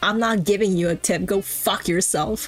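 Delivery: put-on angry, arguing tone. Retelling a game character fighting with her hairdresser: imitating someone angrily fighting. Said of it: "she's literally fighting with the hairdresser".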